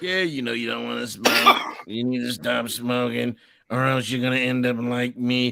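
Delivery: woman's voice like a public service ad announcer. Retelling an anti-smoking commercial: imitating the Truth commercial lady. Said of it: "she be talking like this".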